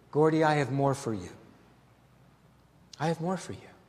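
tender, put-on voice. A speaker recounting his conversion retells what Jesus said to him, tenderly. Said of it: "so tenderly as a shepherd".

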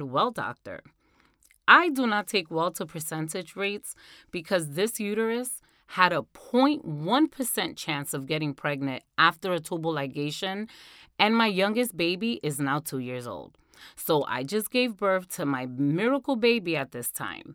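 usual speaking voice

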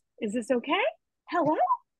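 upward lilt ending okay and hello. Showing how women go up at the end of sentences: rising at sentence ends. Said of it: "women go up in the end of their sentences".

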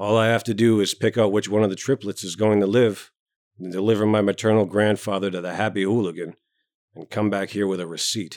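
plain

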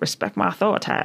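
quiet fast mutter. Retelling a moment in a car's back seat: muttered Cartman quote under breath. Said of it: "muttered under my breath".

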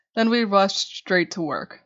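ordinary delivery

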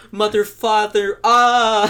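yelling insults. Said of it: "we started yelling at them".

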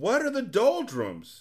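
very high, loud, swooping cry. A young man calls to a voice he cannot see, crying out loudly. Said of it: "He cried loudly".

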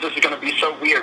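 normal talking voice

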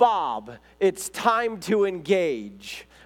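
very slow put-on yell, every word dragged out. Retelling a film scene where the wife yells: imitating someone yelling. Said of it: "she yells".

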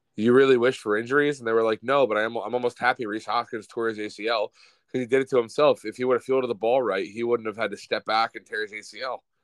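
ordinary talk

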